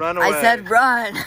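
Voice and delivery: loud, slow, drawn-out yell.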